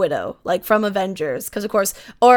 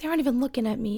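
mock-dejected mutter, much quieter; 3 semitones higher, 8 dB quieter than usual. Retelling a fanboy commentator being ignored; imitating a dejected mutter under his breath. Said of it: "he just says it so dejectedly and under his breath".

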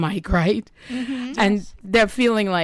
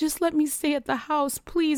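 high, puppy-dog pleading voice; 8 semitones higher, 4 dB quieter than usual. Retelling how he pleaded with her to let him stay at the house, imitating puppy-dog begging. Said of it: "he's begging like a little puppy dog".

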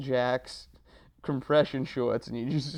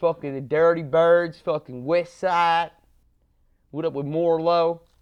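very loud, fake, put-on Baltimore accent; 4 semitones higher, 8 dB louder than usual. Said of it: "I'm just making voices now".

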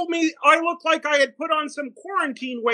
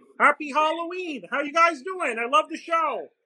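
put-on frog puppet voice; 3 dB quieter than usual. Popping in as a surprise guest on the show, greeting everyone in a Kermit the Frog voice. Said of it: "That is a better Kermit than the current Kermit".

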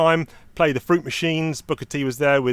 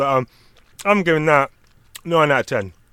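chewing while talking, mouth full; 3 dB louder than usual. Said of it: "you don't wanna hear me chewing this".

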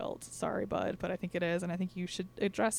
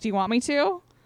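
put-on angry voice, higher pitch; 5 semitones higher, 10 dB louder than usual. Retelling confronting a man, reenacting the speaker's own angry threat to him. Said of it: "Geez, calm down".

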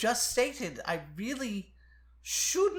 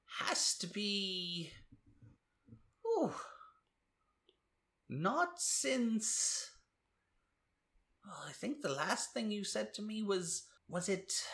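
put-on soft, muddled, doddering, rambling old-man voice; 6 dB quieter than usual. Game master voicing an older merchant greeting a returning party, in an old merchant character voice. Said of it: "you are greeted with the sight of an older gentleman behind what looks like a merchant's counter".

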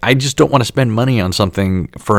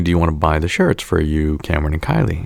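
ordinary delivery

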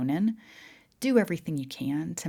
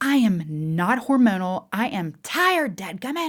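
put-on very loud, pitched-up defensive outburst; 6 semitones higher, 8 dB louder than usual. Retelling a reply to a husband's comments: imitating own defensive retort. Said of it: "I would get so defensive and be like".

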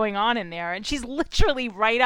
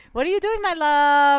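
fake, forced lovey-dovey tone, pitched up; 5 semitones higher, 3 dB louder than usual. Retelling a couple's talk, imitating fake, forced affection. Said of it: "it's so fake and forced".

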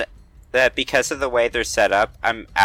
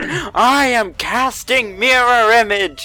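loud, drawn-out high yelling; 11 semitones higher, 5 dB louder than usual. Speaking as the character Kelvin, announcing a spell: yelling at the crowd. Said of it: "yells at the crowd".

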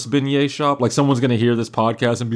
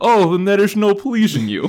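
put-on pitched-up Dutch accent; 7 semitones higher than usual. Speaker tells what they say when someone turns down an offer; Goldmember's Dutch accent. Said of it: "That's my Dutch accent".

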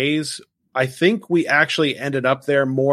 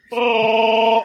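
put-on creature roar, higher; 8 semitones higher than usual. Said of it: "That's a good impression".

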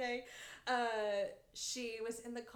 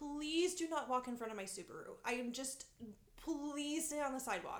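imitated nervous pleading, higher; 3 semitones higher than usual. Retelling pleading with drunk students while driving: imitating own nervous plea. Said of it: "I was so nervous".

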